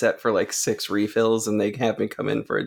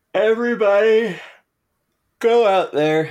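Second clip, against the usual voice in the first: speaking through a yawn, higher and louder; 10 semitones higher, 5 dB louder than usual. Urging everyone to see a doctor, yawning while talking. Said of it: "I apologize for yawning".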